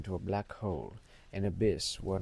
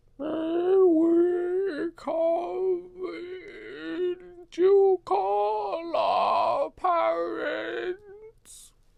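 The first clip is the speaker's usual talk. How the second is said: put-on eerie hollow child voice, very high and very slow; 7 dB louder than usual. Telling a scary story, voicing a little boy: hollow creepy child voice. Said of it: "Is that hollow, hollow enough?".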